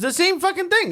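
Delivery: high, exasperated outburst thrown up in disbelief.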